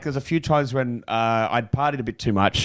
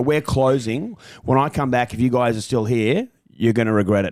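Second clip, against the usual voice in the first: put-on menacing bouncer voice. Retelling what a bouncer said when closing: imitating a menacing bouncer. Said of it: "quite menacing at the end".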